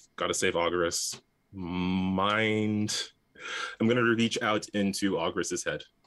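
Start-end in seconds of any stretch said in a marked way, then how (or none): none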